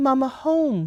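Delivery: mock sorrowful, sad, high, pleading tone. Speaker retells his reply on seeing her suitcase, imitating a sad voice. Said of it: "he was so sad".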